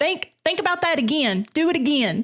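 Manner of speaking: stern nanny-style voice. Acting out a lady on an imagined show called Kentucky Justice: imitating a TV nanny lady. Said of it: "it's just a lady going".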